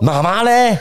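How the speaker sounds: acted, enraged, very high-pitched, furious tone. Retelling asking the children where their mother was: retelling own furious question. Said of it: "我那时候是气疯".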